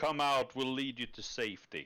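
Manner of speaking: menacing, threatening voice. Calling on people inside a burning church to come out: threatening tone. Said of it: "That sounded threatening as fuck".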